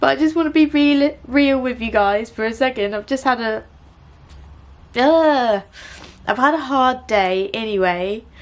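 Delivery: talking through tears. Speaker opening up to viewers after messing up a clip: crying while talking. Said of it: "I'm crying".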